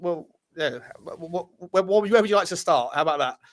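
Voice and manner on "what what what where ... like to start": stammering, stuttering, repeating words. Talking to Sean after he waited, stuttering. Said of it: "I'm stuttering".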